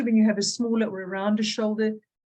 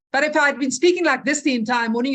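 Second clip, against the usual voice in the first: angry, louder and slower. Demonstrating to a group how a harsher tone of voice makes a speaker come across, in an angry tone. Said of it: "in a voice like this".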